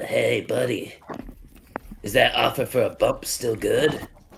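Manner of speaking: small, tiny talking-muskrat critter voice. A game master voices a muskrat speaking to a player's character: small muskrat voice. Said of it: "you hear a small voice say to you".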